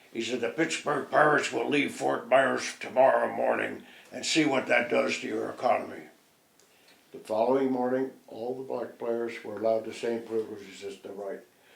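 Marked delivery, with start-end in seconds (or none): 0.4-6.1 low, deep-voiced delivery. Retelling a warning to the mayor of Fort Myers: imitating Ricky's deep voice. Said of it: "with his deep voice and tone".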